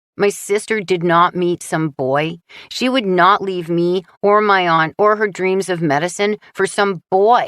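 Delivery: scornful, disdainful tone. Reading a character denying his sister met a boy: full of disdain. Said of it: "so much disdain in his voice".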